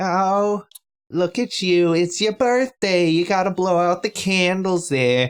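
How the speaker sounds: high-pitched rambling chatter. Retelling how the young girlfriend rambles at a birthday: Janice from Friends voice. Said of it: "she sounds like Janice from Friends".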